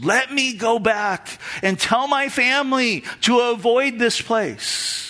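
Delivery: slow, high, drawn-out pleading tone. The speaker retells the bible story of a rich man in hell: acting out begging. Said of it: "He begs".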